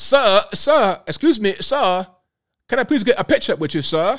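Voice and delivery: put-on British accent, voice sitting up high. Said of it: "she was using the British accent".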